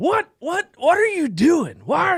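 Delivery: put-on, high, shrill yelling with pitch flying around. Retelling how a high school football coach called out: imitating a coach yelling. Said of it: "he'd just yell and yell and yell".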